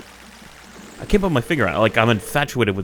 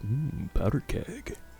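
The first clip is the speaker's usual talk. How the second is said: sly, devious villainous voice with metallic tone; 3 semitones higher, 9 dB quieter than usual. Retelling a line said earlier in the game: devious metal voice. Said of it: "in my best, like, devious metal voice".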